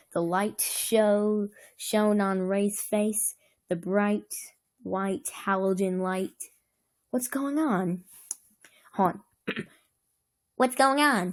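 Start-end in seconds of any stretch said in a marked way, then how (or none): 10.6-11.4 jittery, nervous, pitched-up voice. Narrator reading Josh's line as a bright light shines on Ray; high-pitched, nervous voice. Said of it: "Josh asked in a high-pitched, nervous voice".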